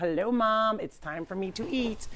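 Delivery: dog voice, speaking politely. Showing viewers how the dog gets in his chair: voicing Jeff the dog. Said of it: "he gets right in his chair like".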